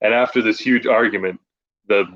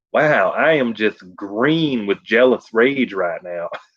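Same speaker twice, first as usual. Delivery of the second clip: put-on casual Southern accent with a lisp. Retelling a movie line, imitating Bill Hader: casual Southern lisp. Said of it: "with the Southern lisp".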